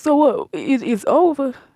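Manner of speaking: mock blubbering, sobbing, crying through tears. Retelling a man's reply after being told to leave, imitating someone crying. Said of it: "Stop crying".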